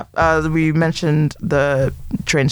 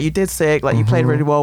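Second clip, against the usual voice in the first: ordinary talk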